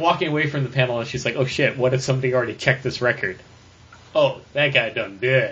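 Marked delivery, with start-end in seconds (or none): none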